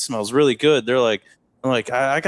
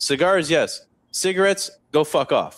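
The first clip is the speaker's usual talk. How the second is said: short, blunt, curt matter-of-fact tone; 3 semitones higher than usual. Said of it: "looks me dead in the face".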